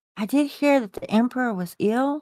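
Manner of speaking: hushed, confiding stage half-whisper. Recounting what she told him, imitating her half-whisper. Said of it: "and she kind of whispers".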